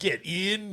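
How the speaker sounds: London Cockney man's voice. Joking about a film's odd foreign title, picturing the speaker: cockney accent. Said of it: "a Cockney guy".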